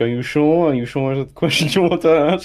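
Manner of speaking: play-acted agonizingly tense delivery with sarcasm. Voicing a card reader who asks if the question is sure: tense, sarcastic delivery. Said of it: "with agonizing levels of tension, he's like".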